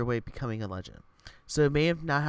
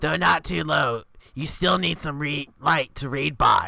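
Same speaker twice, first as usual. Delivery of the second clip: put-on raspy old lady voice, raised; 3 semitones higher, 6 dB louder than usual. Voicing Grandma about a return letter policy: raspy old lady voice. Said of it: "old lady voice".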